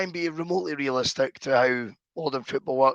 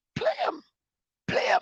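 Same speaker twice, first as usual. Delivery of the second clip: odd put-on voice, much higher pitch; 4 dB quieter than usual. Retelling what the other person said about a player, in an unnatural high-pitched voice. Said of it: "He goes in this unnatural, high pitched voice".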